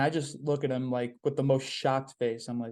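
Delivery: ordinary talk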